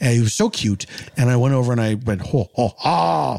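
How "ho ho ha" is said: rough, creaky ho-ho laugh. Retelling a dream of greeting a neighbor's little boy, in a Santa voice. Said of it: "Do you struggle with the Santa voice in your dream".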